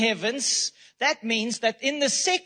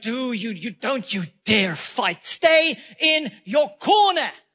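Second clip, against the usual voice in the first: put-on menacing, intimidating, powerful voice; 4 dB louder than usual. Voicing the enemy as a mouse with a microphone: intimidating, powerful voice. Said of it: "he sounds intimidating and he sounds powerful".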